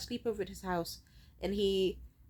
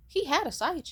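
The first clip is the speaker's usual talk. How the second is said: "he" stressed, higher and louder.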